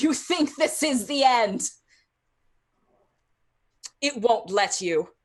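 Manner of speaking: loud, echoey, reverberating voice. Game master voicing a voice that reverberates through the castle, echoey voice. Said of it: "the same echoey voice that just kind of reverberated".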